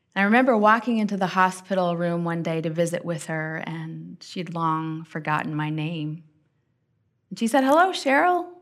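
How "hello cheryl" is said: high-pitched, joyful voice. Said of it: "with the same joy she always had".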